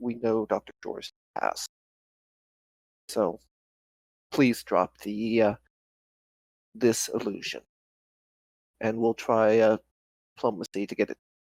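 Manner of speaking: very quiet, soft, hushed voice. As a character stepping between them and shaking her head, speaking very quietly. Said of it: "very quietly say".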